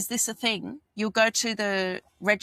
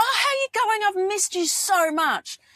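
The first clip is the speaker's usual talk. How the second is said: bubbly, gushing, excited voice, very high-pitched; 11 semitones higher, 5 dB louder than usual. Acting out greeting a friend on seeing them: imitating an energetic, excited greeting. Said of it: "If I'm coming at you with that energy".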